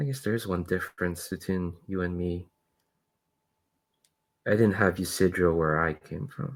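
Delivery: small, hushed, very soft, barely-there voice. Voicing a character who sees two others holding hands: small sort of voice. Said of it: "a small sort of voice".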